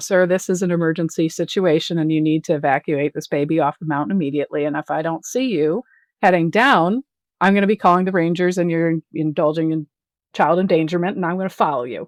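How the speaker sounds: mock stern, firm, no-nonsense delivery. Retelling warning a man during a mountain emergency, in a put-on stern voice. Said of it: "put on my my stern voice and said".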